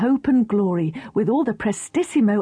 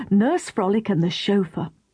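plain

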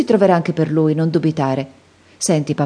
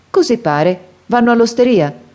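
contemptuous, scornful, pitched-up little dismissal; 6 semitones higher, 3 dB louder than usual. A man watching peasants' carts pass leans toward the coachman, in a contemptuous tone. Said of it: "soggiunse in tono sprezzante".

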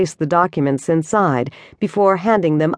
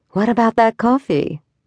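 sultry, seductive come-on tone; 4 semitones higher than usual. Narrator reads a woman's line to a man; seductive murmur. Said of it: "her voice dropping to a seductive murmur".

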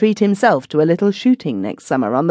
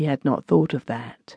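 ordinary delivery

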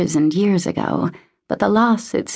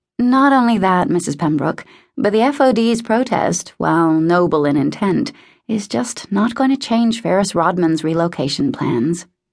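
plain reading voice

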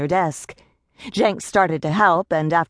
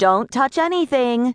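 loud, high call from another room; 7 semitones higher than usual. In a story, Vanessa calls back as she heads into the back office, said loudly. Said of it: "she said loudly".

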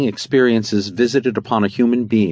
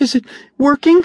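put-on very high, small child voice, cracking and breaking; 5 dB louder than usual. A narrator voices a child asking his father, little voice splintered with emotion. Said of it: "Jacob's little voice was splintered with emotion".

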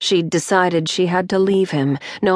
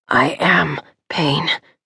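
raw, rough, agonized, tortured voice; 2 semitones lower than usual. A man in a hospital bed answers a woman asking about pain, rough, tortured voice. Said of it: "his voice rough, tortured".

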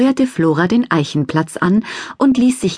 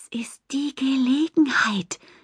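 eager, high-pitched, excited hushed whisper; 6 semitones higher, 8 dB quieter than usual. Flora speaks to Laurus, excited whisper. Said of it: "wisperte Flora aufgeregt".

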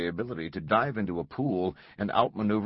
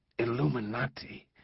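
stammering, pitched higher; 3 semitones higher than usual. Langdon, staring at a word branded on a victim's chest, stammering. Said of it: "he stammered".

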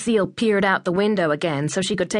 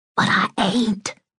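put-on boy's voiced stage whisper. Willie, after his mother Lucille hushes him, whispering. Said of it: "the boy whispered".

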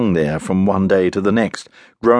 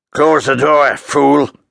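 harsh, rough, raised bellow; 6 semitones higher, 4 dB louder than usual. Someone inside yells at a man entering the room, rough bellow. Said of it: "a rough voice bellowed".

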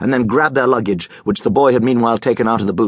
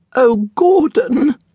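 very high, frightened, pleading whimper. Frozen in a dim car park after thunder, the woman speaks to Gordon, whimpering. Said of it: "the woman whimpered".

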